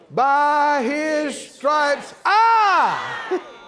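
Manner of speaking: every single word given heavy emphasis.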